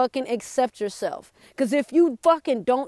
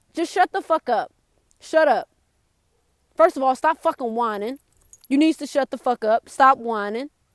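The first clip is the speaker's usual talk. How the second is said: plain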